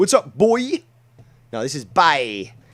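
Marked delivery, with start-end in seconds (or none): 0.0-0.8 put-on, loud, very high inner-city American accent. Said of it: "Boy is, like, inner city America".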